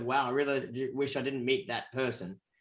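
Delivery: ordinary delivery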